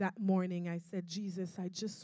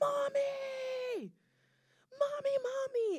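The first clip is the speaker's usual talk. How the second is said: put-on, very high, drawn-out kids' scream. A mother retelling her small kids suddenly calling out to her: imitating kids screaming. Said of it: "they're going to scream".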